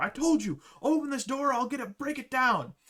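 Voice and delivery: shrill angry shouting. Narrator voices a man banging on a suite door, angry yelling. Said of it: "he's just yelling at him".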